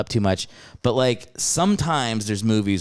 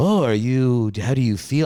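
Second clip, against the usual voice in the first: put-on Norwegian accent. Retelling what a friend from Norway asked at dinner: imitating a Norwegian accent. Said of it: "with his Norwegian accent was like".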